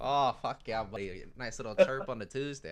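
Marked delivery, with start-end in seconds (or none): 0.0-1.2 put-on Canadian accent, hockey-player style. Joking about people who speak like hockey players: put-on canadian hockey-player accent. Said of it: "I hate that accent so much".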